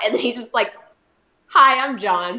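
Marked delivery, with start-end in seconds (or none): 1.5-2.4 mock calm speech, higher pitch. Retelling being found hiding in a closet, quoting his reply: imitating a calm reply. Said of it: "So calm".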